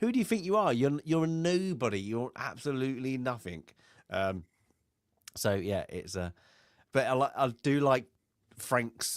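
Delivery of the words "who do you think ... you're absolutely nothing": put-on brushing-off tone, scornful and condescending. Retelling a film scene where a man belittles Frank: imitating a dismissive put-down.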